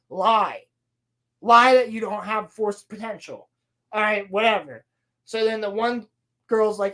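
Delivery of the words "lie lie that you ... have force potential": normal talking voice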